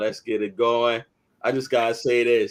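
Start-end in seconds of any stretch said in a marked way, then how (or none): none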